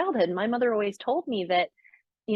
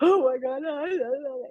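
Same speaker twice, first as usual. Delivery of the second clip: mock sobbing, hard, gasping, high, drawn-out ugly crying; 5 semitones higher than usual. Retelling breaking down on a Zoom call with a coach: imitating ugly crying. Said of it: "ugly crying in front of her".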